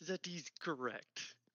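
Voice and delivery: put-on very quiet and hushed with a slight German accent. Answering a gnome about the archives, with a slight German accent. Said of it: "did I just go slightly German?".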